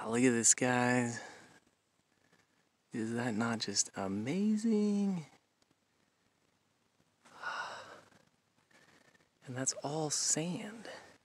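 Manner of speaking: soft, hushed whisper. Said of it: "the reason why I'm whispering".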